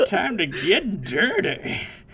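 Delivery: put-on lecherous old-man voice, slow, swooping and sing-song. Repeating a line from Roshi, imitating Roshi's lecherous old man voice. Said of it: "he says it in a way that a horny old man really shouldn't be saying it".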